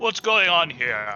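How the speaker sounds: authoritative voice. Voicing a guy who comes down the hallway to the intruders, authoritative voice. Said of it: "in an authoritative sounding voice".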